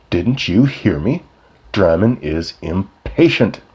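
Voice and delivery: slow, threatening, menacing tone. A man confronts another who bumped into him, in his most menacing voice. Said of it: "In his most menacing voice".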